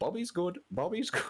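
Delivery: very high, echoey, echoing talking-bird parrot voice. A magic bird speaks in the story, in an echoey bird voice. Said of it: "in the best kind of echoey voice that those birds can do".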